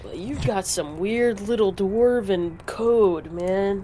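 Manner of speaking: put-on stoner dude voice. Speaking in character to another character, in a stoner frat boy voice. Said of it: "sounds like a stoner frat boy".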